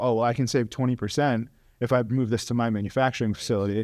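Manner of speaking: ordinary talk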